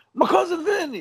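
high-pitched, put-on New York accent. Quoting a movie line as the character says it: imitating a new york accent. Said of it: "he says it in New York accent".

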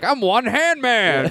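squeaky, very high, very slow, drawn-out comic voice. Retelling a Weekend Update bit about low-budget Halloween costumes: Adam Sandler impression. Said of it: "tuck his hand in his shirt and just be like".

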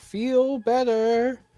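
very high, shrill, called-out shout. Playing Aldun, the player calls out to someone still surrounded: Aldun shouting out. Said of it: "and just shout out".

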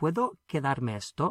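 rising pitch at the end on esto. Spanish lesson, turning a statement into a question: question voice. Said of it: "just the same as I can keep this, but with a question voice".

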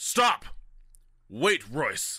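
loud swooping shout. Speaking in character to a giant hand closing on the boat: in-character shout to stop. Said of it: "I'm gonna say".

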